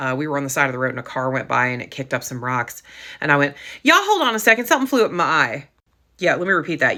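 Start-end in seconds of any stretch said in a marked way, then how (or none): 3.8-5.7 put-on sing-song Atlanta Southern accent slipping out. Retelling a roadside moment with friends in Ireland: Atlanta accent. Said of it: "my ATLian came out".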